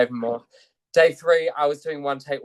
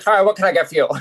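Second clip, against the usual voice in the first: put-on mouthy character voice, higher and louder; 6 semitones higher, 8 dB louder than usual. Retelling serving coffee truck customers while dressed as the Grinch: Grinch voice. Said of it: "I actually dressed as the Grinch".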